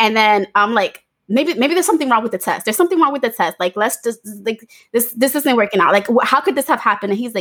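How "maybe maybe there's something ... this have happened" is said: put-on frantic, spiralling panic, rushed babble. Retelling a reaction to a pregnancy test: retelling own past panic. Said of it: "start going into panic mode".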